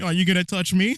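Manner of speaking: far too happy, overly cheerful and gleeful. Mocking a guy who sounded way too happy, in a mock overly happy tone. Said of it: "He sounded way too happy and going".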